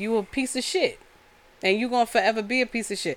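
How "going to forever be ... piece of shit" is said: ordinary talk, nothing marked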